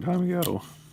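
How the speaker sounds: adolescent voice breaking, cracking mid-line. Showing the stuff on the doors to the camera, voice cracking. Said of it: "Sorry, my voice cracked".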